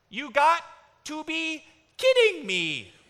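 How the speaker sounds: put-on very high, squeaky, swooping little toddler voice. Retelling how a two-year-old son echoed from the back seat: squeaky two-year-old voice. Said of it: "the squeaky little voice of a two-year-old".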